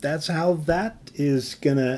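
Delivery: plain reading voice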